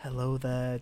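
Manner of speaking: silky, smooth late-night radio host voice. Retelling how the film's radio presenter starts off: imitating a smooth radio presenter. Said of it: "smooth on the radio".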